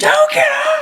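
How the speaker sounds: shrill, very high, screamed yell. Retelling a roping run, imitating the trainer screaming: imitating someone screaming. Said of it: "my trainer's screaming at me".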